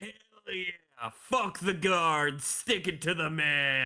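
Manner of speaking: rowdy scruffy gnome prisoner voice, cheering and defiant. Voicing the gnome cellmate cheering before a high five: scruffy deep gnome prisoner. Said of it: "He's gonna high five you".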